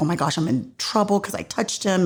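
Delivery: frightened, terrified, panicked voice. Retelling an emotional scene, the speaker voices a woman's fearful thoughts: imitating someone terrified. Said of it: "you see her kind of terrified".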